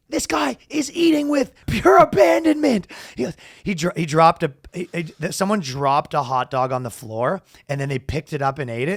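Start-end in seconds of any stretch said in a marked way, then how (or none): 0.1-2.8 put-on high, shrill sportscaster yell, way up high. Retelling an announcer calling out while people eat, imitating him yelling. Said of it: "he's yelling".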